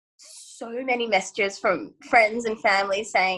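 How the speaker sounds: ordinary talk, nothing marked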